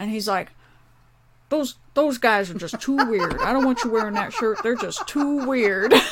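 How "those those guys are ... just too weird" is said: put-on muffled voice, as if marbles in mouth. Retelling the pastor questioning a shirt: imitating the pastor's marbles-in-mouth voice. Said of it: "he always sounded like he had marbles in his voice".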